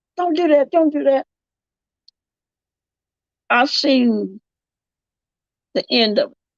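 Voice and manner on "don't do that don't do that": high-pitched yelling of no. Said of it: "started yelling".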